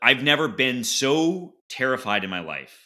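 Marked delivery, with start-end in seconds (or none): none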